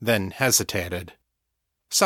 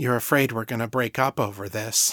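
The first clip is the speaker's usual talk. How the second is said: plain reading voice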